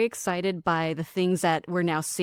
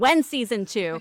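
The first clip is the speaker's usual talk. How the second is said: play-acted pushy, insistent, aggressive, demanding tone; 4 semitones higher, 3 dB louder than usual. Quoting people who reached out about the speaker's show; reading a fan's question aggressively. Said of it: "I may be reading it aggressively".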